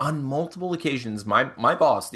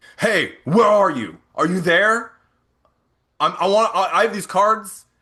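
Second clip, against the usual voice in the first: loud, grating, abrasive voice, pitched up; 6 semitones higher, 6 dB louder than usual. The speaker imitates a caller on the business phone, imitating a quick, abrasive caller. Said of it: "Just like really very quick, very abrasive".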